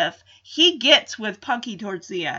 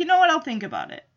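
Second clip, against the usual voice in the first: mock dismissive tone, higher and faster; 5 semitones higher, 4 dB quieter than usual. Recapping an episode where Betty tells Henry to stop the pills, imitating Henry brushing it off. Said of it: "Henry just sloughs it off".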